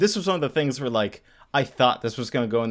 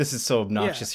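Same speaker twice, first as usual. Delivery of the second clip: ordinary delivery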